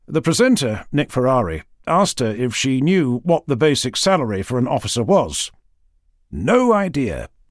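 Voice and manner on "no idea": acted, mock-proud tone. Quoting a woman's answer to the presenter's question, mock-proud. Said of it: "she said proudly".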